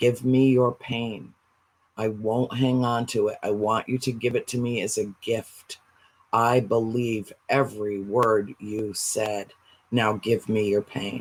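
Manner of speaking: whisper. Retelling what the speaker whispers to a crying person they hug: retelling a whisper. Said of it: "and I lean over and I whisper".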